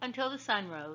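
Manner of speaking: ordinary delivery, nothing marked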